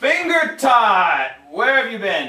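very loud, high scream swooping up and down. A storyteller voicing a man who greets the listeners as they approach, screaming. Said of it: "he screams".

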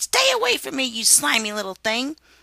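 high, loud, revolted cry of disgust. Harriet recoils from a slug near her hand, crying out in disgust. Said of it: "Recoiling in disgust, she cried".

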